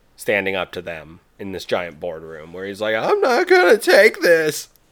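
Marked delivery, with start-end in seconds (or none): 3.0-4.7 squeaked out, high and loud. Imagining Sony standing up to fans in a giant boardroom, Squeaky Voiced Teen impression. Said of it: "the squeaky voice teen from the Simpsons show".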